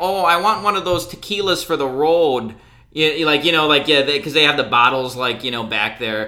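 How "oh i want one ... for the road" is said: put-on annoying Chicago accent, woman's voice. Retelling what a woman said after finishing the transaction, in an annoying chicago accent. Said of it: "she had like a really annoying Chicago accent".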